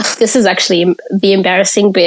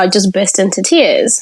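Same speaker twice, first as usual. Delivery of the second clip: plain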